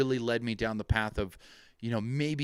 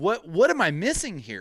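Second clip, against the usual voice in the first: mock angry and frustrated, much higher pitch; 6 semitones higher, 4 dB louder than usual. Recounting a moment that pissed them off, retelling pissed-off frustration. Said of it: "that pissed me off. I was like".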